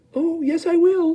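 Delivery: tiny, small, squeaky, high voice. Reading Mike Teavee's reply to his parents, in a tiny squeaky voice. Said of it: "squeaked the tiny voice of Mike T V".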